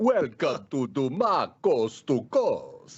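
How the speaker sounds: put-on Transylvanian-accented voice. Switching the bit from Finland to Transylvania, a co-host speaks in a Transylvanian accent. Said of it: "we could do Transylvania".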